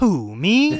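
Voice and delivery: acted-out sassy tone, very high-pitched and loud. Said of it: "it was so sassy and sarcastic".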